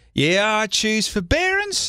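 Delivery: strong, distinct Australian accent, slow and high. Suggesting a phrase works better in an accent: strong Australian accent. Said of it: "If you say it with a real distinct Australian accent".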